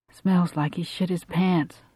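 plain reading voice

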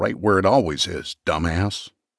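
ordinary delivery

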